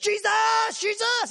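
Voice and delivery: very high-pitched, very loud yelling.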